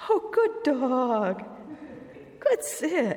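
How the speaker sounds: very slow, silly high voice, "dog" drawn out. Speaker demonstrates praising a dog during training, in a really stupid high voice. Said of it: "You use this really stupid high voice".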